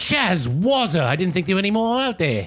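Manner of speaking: very high, foresty woodland-dwarf character voice. A dwarf character greeting another rare dwarf, in a dwarfy voice. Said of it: "foresty, dwarfy voice".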